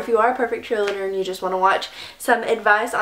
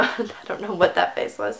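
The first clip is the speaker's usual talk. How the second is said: ordinary talk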